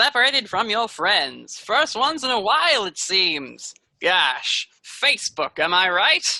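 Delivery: mysterious, unseen voice as over an intercom. Voicing an intercom voice that taunts a player's character: mysterious intercom voice. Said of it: "mysterious voice".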